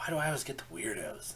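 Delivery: hushed mutter, half under the breath. After a customer flies off, she mutters under her breath to herself. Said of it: "She kind of mutters under her breath".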